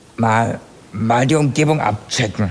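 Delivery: very deep, sullen, grumpy grumble. Grant answers when asked what he plans to do today, grumpy tone. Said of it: "in seinem mürrischen Ton".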